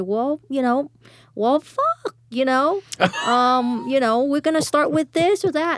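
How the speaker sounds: sarcastic, drawn-out you. Recalling how she opened her turn among the men, retelling a sarcastic opener. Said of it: "sometimes I would sarcastically start out and say".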